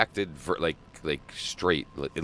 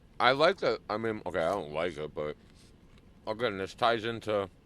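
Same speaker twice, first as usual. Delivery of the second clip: talking with mouth full, chewing while speaking; 4 semitones higher than usual. Chatting while eating lunch, talking with mouth full. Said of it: "munching on luncheon and shit".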